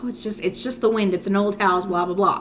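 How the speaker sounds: ordinary talk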